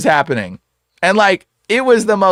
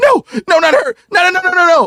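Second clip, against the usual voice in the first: put-on panic, much higher, slower; 12 semitones higher than usual. Retelling a possessed man reacting to a woman on the phone, imitating a panicked plea. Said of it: "he starts panicking from this woman".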